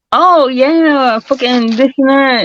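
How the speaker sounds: put-on affected young woman voice, very high pitched.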